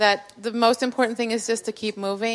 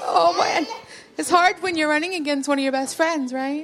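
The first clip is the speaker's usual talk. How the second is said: choked up, tearful, pitched-up voice close to crying; 5 semitones higher than usual. Just announced as the winner of a vote, thanking supporters, crying. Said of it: "I'm crying".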